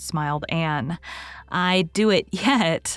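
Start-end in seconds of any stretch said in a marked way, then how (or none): 1.5-3.0 laughing while speaking. Diana answers a remark that the two ladies never do such work, laughing. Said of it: "laughed Diana".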